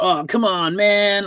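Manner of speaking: very high, stretched, drawn-out surfer-dude voice. Describing a character's voice in an old movie dub: surfer voice. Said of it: "his voice was like a surfer".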